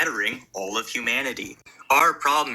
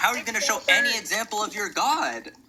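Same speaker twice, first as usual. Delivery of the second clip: very high, heated yelling; 9 semitones higher than usual. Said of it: "the yelling and stuff is a bit hard".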